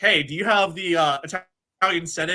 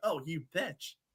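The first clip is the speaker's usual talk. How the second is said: muttering under breath, quieter; 2 semitones lower, 12 dB quieter than usual. Retelling own words on a hot mic: imitating muttering under breath. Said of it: "you could hear me say under my breath".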